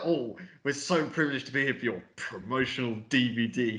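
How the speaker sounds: dripping, mocking, most sarcastic delivery possible. Retelling a character's line about a promotional DVD: imitating a very sarcastic remark. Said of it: "the most sarcastic way ever".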